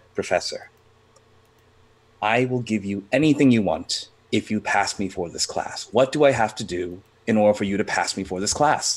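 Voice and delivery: ordinary talk, nothing marked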